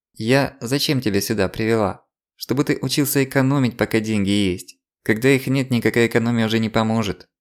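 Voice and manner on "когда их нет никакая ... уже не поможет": ordinary delivery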